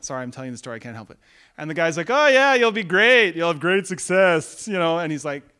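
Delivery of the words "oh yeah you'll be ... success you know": loud, sarcastic, mocking tone. Retelling a prophet's answer to a king's demand, retelling a sarcastic reply. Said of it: "How many prophets do you know that are sarcastic?".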